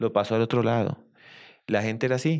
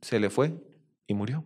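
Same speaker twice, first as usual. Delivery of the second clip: usual speaking voice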